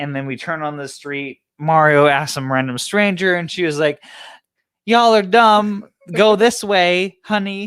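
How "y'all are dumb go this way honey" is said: high, loud, slow, motherly talking-to tone. Retelling how a stranger gave directions: imitating a stranger talking like a mom. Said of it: "she talked to you like a mom".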